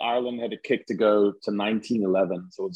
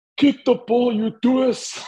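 clear ringing voice, pitched very high; 4 dB louder than usual. Retelling how a lone fan called out to the kicker in total silence: imitating a clear voice. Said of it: "just in a clear voice says".

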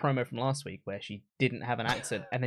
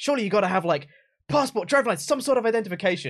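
put-on exasperated voice, higher and louder; 9 semitones higher, 6 dB louder than usual. Retelling a funny line Kevin Owens said: imitating exasperated Kevin Owens. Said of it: "properly, like, exasperated Kevin Owens".

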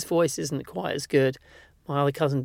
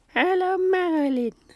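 put-on high-pitched grandmother voice. Retelling how grandma greeted the family: imitating grandma's voice. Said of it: "she always called her".

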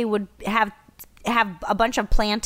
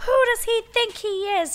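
high, fast, indignant huff. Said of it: "I was just like".

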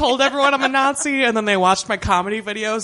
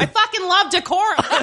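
pitched-up, put-on Boston Massachusetts accent; 8 semitones higher than usual. Repeating a character's line when told to, in a Boston accent. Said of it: "Say it like you're from Boston".

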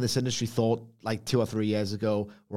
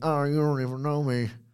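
put-on wrestling announcer voice; 4 semitones higher than usual. Describing a wrestling move sequence: Jim Ross voice. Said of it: "I got a bit Jim Ross there".

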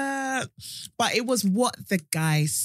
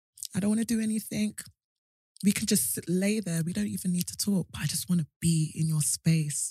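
put-on whisper, lower in pitch; 4 semitones lower than usual. Retelling what a man whispered in her ear: imitating a man whispering. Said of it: "he whispered in my ear and he was like".

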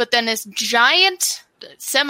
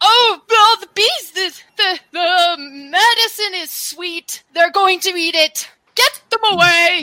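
put-on high, frantic, panicked old man voice, alarmed; 7 semitones higher, 3 dB louder than usual. Voicing a blind old man as bees circle the medicine: panicked blind old man. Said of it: "this mysterious blind man is just".

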